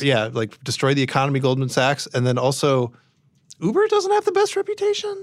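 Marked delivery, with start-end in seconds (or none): 3.6-5.2 voice jumping up very high. Discussing a cashback deal in conversation, in a really high voice. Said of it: "Really high voice when I say that".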